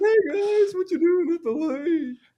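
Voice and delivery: goofy, loud, very high cartoon voice. Retelling a game, the speaker voices an awakened creature greeting the party: cartoon voice. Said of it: "it was probably some cartoon voice".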